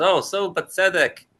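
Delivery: acted sarcasm that sounds nice and sweet. Showing how the phrase is said as a sarcastic comment: sarcastic. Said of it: "this sarcastic comment".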